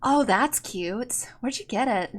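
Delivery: very soft, hushed, perked-up, brightened curiosity. The narrator voices a woman reacting to a player's eye patch, perking up a little. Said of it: "she actually perks up a little bit".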